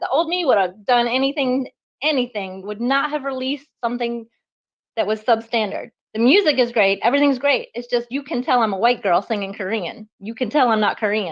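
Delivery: plain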